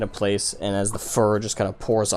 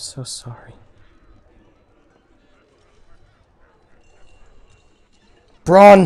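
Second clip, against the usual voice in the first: very loud, high croaking voice, cracking and breaking; 8 semitones higher, 11 dB louder than usual. Kneeling with her hand on Braun, she speaks to him in a croaked, cracking voice. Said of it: "with a croaked, uh, cracking voice".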